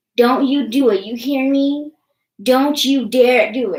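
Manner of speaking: mock nasty, loud, menacing, threatening voice. Retelling a woman's call to her mom's phone, imitating an evil threat. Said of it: "from nice to an evil fucking bitch".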